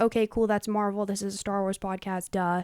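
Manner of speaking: ordinary delivery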